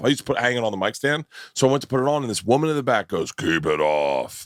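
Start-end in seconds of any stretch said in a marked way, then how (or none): 3.3-4.5 real deep voice, bottomed out very low. Retelling a woman in the back calling out, imitating a real deep voice. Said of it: "like real deep voice".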